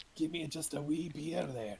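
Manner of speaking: high Scottish brogue. Speaking as a dwarf, since every dwarf has a Scottish accent, Scottish dwarf accent. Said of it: "I can speak Dwarven".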